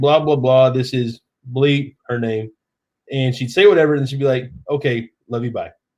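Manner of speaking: usual speaking voice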